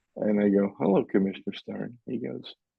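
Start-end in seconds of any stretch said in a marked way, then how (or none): none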